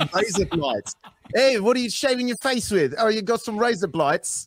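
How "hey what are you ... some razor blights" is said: very high-pitched put-on Australian accent. Asked to say a phrase in an accent, doing an australian accent. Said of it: "an Australian version of Razor Blades".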